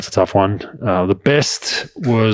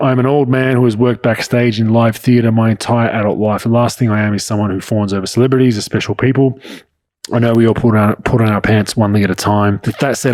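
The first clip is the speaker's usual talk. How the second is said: plain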